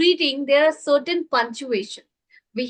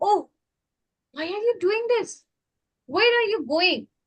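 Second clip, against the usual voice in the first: expressive, emotional exclamation, higher pitch; 6 semitones higher than usual. Speaker showing how to modulate the voice at an exclamation mark, emotional exclamatory reading. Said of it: "you have to show certain emotions".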